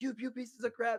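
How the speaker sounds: breathless, high, mock yelled abuse. Retelling how the brother watching pledges in the basement yelled: imitating someone yelling. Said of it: "just yelling at us".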